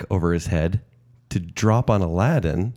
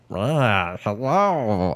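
put-on alien creature voice. Imagining the matchup and acting out what Stitch would say: voicing Stitch. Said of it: "Stitch will be like".

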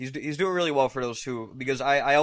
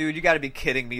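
ordinary delivery

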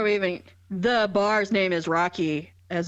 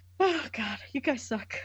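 exasperated, fed-up delivery with a sigh. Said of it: "the exasperation in her voice".

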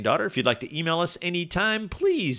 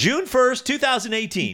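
announcer-style voice, pitched much higher; 10 semitones higher, 3 dB louder than usual. Co-host of a father-daughter podcast, on air, in an announcer voice. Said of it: "That was my announcer voice".

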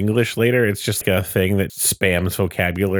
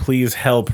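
ordinary delivery

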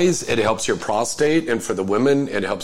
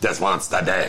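put-on street voice, much faster; 4 semitones lower than usual. Repeating how another speaker just said it, in a street voice. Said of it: "This is the way you said it".

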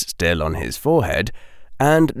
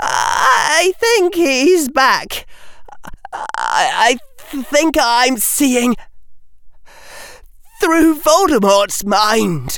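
wavering, louder, much higher, slower voice. Speaking to the silent crowd around him, wavering but louder voice. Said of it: "his voice still wavering but louder".

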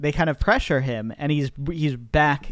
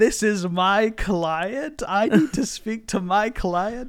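play-acted high, bellowing yelled outburst; 7 semitones higher than usual. Retell a movie scene where the actor stands up and bellows, imitating Brendan Fraser yelling. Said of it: "And he's yelling".

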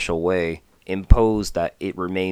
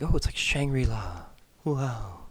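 acted-out, scoffing, derisive, pitched-up sarcastic send-up; 6 semitones higher, 7 dB quieter than usual. Mocking how people gush about a place being shangri-la: imitating people mockingly. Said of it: "I'm kind of mocking the mentality".

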